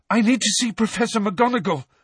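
very high, loud, breathless, winded gasping. Harry speaks to Madame Pumphrey, gasping, out of breath. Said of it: "gasped Harry, the breath tearing his lungs".

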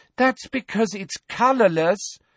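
very high, fed-up, exasperated voice. Narrated character answers a surly complainer in a crowd, exasperated. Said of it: "in a convincingly exasperated voice".

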